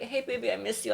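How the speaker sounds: put-on crying. Retelling own past message to an ex: imitating own past crying. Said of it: "I'm me crying".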